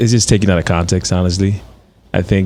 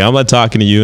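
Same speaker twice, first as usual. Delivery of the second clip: mock, really rude, dismissive tone; 3 semitones higher, 3 dB louder than usual. Retelling what a man who ignored him said: imitating a really rude tone. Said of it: "in a really rude tone".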